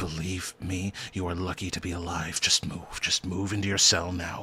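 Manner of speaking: faint, barely audible, hushed half-whisper. A guard leads a bound, gagged old man into a cell, in a faint half-whisper. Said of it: "you could even hear just the faint whispers".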